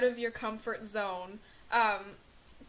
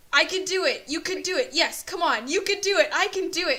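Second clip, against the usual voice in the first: high, loud, terrified little cheerleader voice; 6 semitones higher, 5 dB louder than usual. Speaker retells a little girl going down a steep part, imitating frightened self-cheering. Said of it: "She's just cheering herself on".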